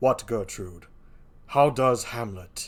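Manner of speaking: dark, deep, menacing, sinister king voice. Reading a play aloud, the king's line to Gertrude, deep, sinister king voice. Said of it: "The king I give a deep, sinister voice".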